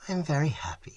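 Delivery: sighing the words out. A woman answers Trent's question; sighing. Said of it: "she sighed".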